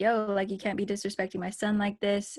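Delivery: normal talking voice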